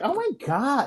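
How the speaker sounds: put-on high whining Southern accent. Discussing a show recap, speaker mimics a woman, imitating whiny southern accent. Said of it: "the whining".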